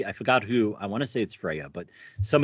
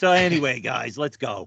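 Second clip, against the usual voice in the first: put-on Jersey accent, raspy smoker's voice. Describing the game's Odin, the speaker imitates his Jersey way of talking. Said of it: "he talks like he's from Jersey".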